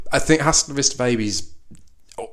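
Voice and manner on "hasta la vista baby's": plain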